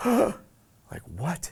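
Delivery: stunned, high, astonished gasping delivery. Describing faces dropping at a Zoom announcement, retelling a gasped 'what?'.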